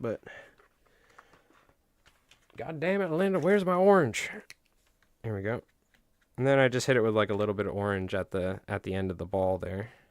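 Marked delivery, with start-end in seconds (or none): 0.0-4.3 put-on American Southern accent, pitched up. The speaker calls to linda asking for an orange, in a southern accent. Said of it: "I don't know why I'm talking with a southern accent".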